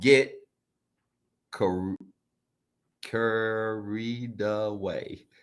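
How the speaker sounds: slow, unhurried reading, away drawn out. Reading out an Instagram post that describes them, the speaker says it slowly. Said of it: "I just said that slow".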